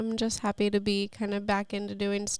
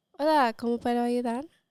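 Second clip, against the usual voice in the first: put-on Mexican Spanish accent; 3 semitones higher, 4 dB louder than usual. Asked for their best mexican sentence, the speaker answers in a mexican spanish accent. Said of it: "give us your best Mexican sentence".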